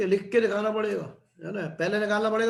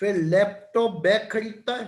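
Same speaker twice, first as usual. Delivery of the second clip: slow, drawn-out dictation with long pauses. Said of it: "मैं धीरे धीरे बोलता हूँ".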